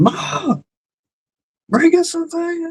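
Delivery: very high, long, drawn-out scream. Acting out a grown man in his mom's basement calling to her, imitating Will Ferrell screaming. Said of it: "He's screaming".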